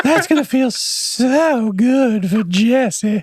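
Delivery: put-on very slow, drawn-out, creepy old-man voice. Doing an impersonation of an old guy: creepy old guy impression. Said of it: "You do an impersonation of an old guy".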